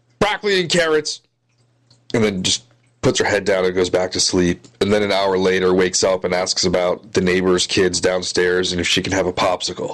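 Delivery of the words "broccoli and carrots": shrill, very high, half-asleep shouted outburst. Retelling a feverish kid's sudden outburst while half asleep: imitating someone shouting. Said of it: "she shouts".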